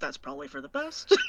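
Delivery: low, barely voiced mutter under the breath. Voicing a character's aside during a scene: muttered under her breath. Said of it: "under her breath, she kinda goes".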